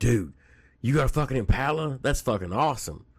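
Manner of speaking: put-on excited burst. Retelling reacting to a classmate's Impala: imitating own excited voice. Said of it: "literally getting excited going".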